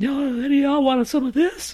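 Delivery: squeaky, very high, loud put-on voice. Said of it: "I talk like High Five Ghost".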